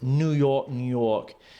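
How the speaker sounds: terrible, put-on New York accent. Reading a signature line out loud, the speaker puts on a terrible New York accent. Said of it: "That was a terrible accent".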